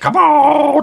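very high-pitched creature voice. Retelling what a man with a van full of dogs says, in his Chewbacca voice. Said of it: "That was his Chewbacca voice".

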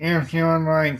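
loud, pushed through the nose. Joining the host at the start of a show episode, in Captain Nasal voice. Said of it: "that's Captain Nasal there".

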